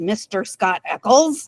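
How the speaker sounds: words growled out. Recounting a Sherlock Holmes episode, voicing Holmes addressing Scott Eccles: growling as Holmes. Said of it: "he kind of growls".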